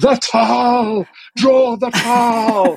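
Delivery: very high, slow shout with a stretched end. Retelling how someone shouted a reminder while she drew, retelling a shout. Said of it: "Kate Wilson from nosey Crow was shouting".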